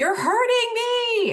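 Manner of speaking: put-on high, loud, childlike screaming.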